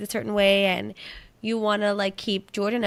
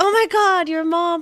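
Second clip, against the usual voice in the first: play-acted high, fed-up, exasperated outburst; 9 semitones higher, 6 dB louder than usual. Recounting a past reaction to a rude message: retelling mock exasperation. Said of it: "I was all like mad at Ernie".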